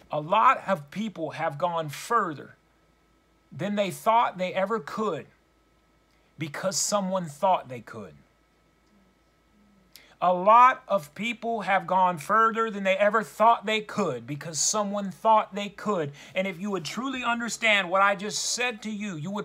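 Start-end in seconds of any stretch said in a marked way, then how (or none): 0.1-16.1 slow, deliberate, measured preacher-style emphasis. Speaking to brothers and sisters, repeating one point twice: slow and deliberate. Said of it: "let me say this slowly".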